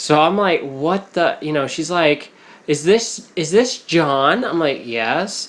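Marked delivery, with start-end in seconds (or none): 2.7-4.4 excited, giddy woman's voice. Retelling a phone call and quoting the female caller, imitating a giddy high female caller. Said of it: "acting very giddy and just sounded with a higher pitch".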